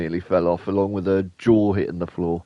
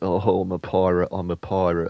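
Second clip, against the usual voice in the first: ordinary talk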